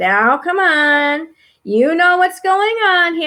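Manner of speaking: slow, firm, reproachful schoolteacher voice. Describing how they have to talk to them: guilt-tripping teacher voice. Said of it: "I have to talk in that teacher voice, like".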